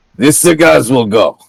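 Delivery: put-on Russian accent. Speaker voices Susie, who belches and puts down a plate of food, Russian-sounding accent. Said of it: "I like the Russian accent".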